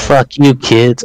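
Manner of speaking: plain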